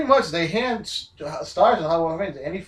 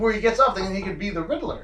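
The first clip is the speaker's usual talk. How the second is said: usual speaking voice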